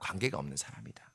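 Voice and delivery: hushed, whispered delivery.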